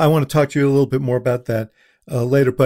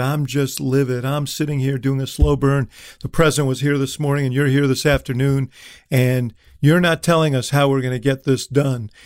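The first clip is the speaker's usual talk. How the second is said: normal talking voice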